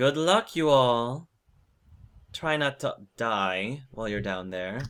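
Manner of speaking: mocking, ribbing, teasing tone. Voicing the captain wishing the players luck: teasing captain's tone. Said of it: "Like that tone".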